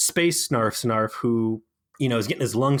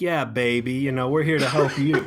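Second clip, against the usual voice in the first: put-on Belgian accent, higher; 2 semitones higher than usual. Retelling a show, the speaker imitates a guy who comes up, Austin Powers-style Belgian accent. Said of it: "With this Belgian accent".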